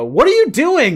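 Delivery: shrill, very high-pitched yelling. Retelling the ref's words to a wrestler: imitating the ref yelling. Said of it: "The ref is yelling at Jericho".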